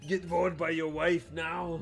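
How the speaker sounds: yelling in an Austrian accent, pitched high. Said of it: "the yelling kinda Austrian voice".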